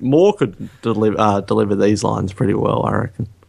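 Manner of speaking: usual speaking voice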